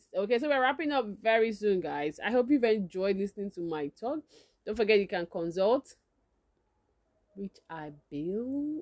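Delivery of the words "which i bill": hushed, half-whispered aside under the breath. Adding a quick aside while wrapping up the talk: half-whispering. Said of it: "I had to whisper that".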